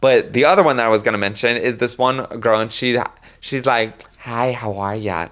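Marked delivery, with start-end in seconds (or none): 4.2-5.3 soft, very slow, soothing, comforting tone. Describing a girl among afterlife receptionists, imitating a comforting receptionist. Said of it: "it's very like comforting vibes".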